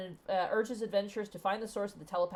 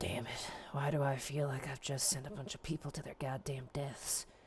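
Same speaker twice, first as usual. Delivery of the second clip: low mutter, muttered under the breath; 4 semitones lower, 3 dB quieter than usual. As the group leaves, Durnan mutters to himself: muttering under breath. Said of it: "mutter to himself under his breath".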